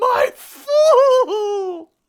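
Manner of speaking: very loud, very high, shrill, drawn-out sobbing screech. Retelling a story, the speaker acts out a man crying at his chair, retelling a tearful screech. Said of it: "he screeches".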